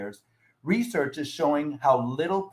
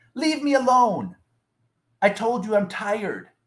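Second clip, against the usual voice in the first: loud, pitched-up, mock irritated, annoyed voice; 7 semitones higher, 5 dB louder than usual. Quoting the man being nudged awake for the sermon, retelling a raised, annoyed reply. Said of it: "he raises his voice and he says to me in an annoyed way".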